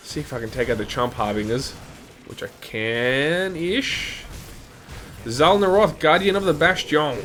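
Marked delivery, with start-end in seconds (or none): 5.3-7.2 full put-on French accent, pitched up. Playing a game and reading out a name, in a french accent. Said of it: "I always go so French in the Bastion".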